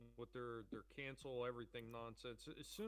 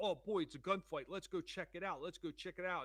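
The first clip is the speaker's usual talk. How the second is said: play-acted, keyed-up, pitched-up excited voice; 6 semitones higher, 8 dB louder than usual. Retelling a video where men hear gunfire: imitating excited man. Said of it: "they're all excited".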